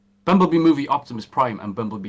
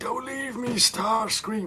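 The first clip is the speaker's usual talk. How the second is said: very high, drawn-out, dragged voice; 13 semitones higher, 3 dB quieter than usual. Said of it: "is it gonna be the deep voice, or is it gonna be, like".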